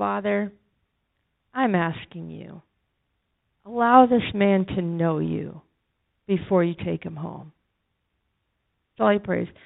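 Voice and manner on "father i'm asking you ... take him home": gentlest, hushed voice, barely above silence. Retelling how a man prayed with his hand on another man, in the softest voice. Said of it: "in the softest voice".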